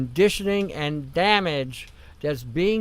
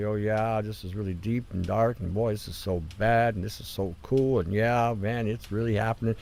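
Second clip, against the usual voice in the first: very low, level, monotone FM radio DJ voice; 8 semitones lower, 4 dB quieter than usual. Describing how FM radio DJs used to talk, imitating their monotone way of speaking. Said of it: "They were going to speak very monotone".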